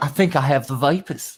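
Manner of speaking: put-on high, slow genteel Georgia belle drawl. Teasing Southerners about movie Southern speech: mocking Georgia proper accent. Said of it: "You all run around all day going".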